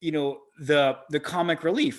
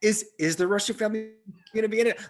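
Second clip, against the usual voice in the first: high, fast, anxious, put-on worried voice. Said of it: "that's a good impersonation".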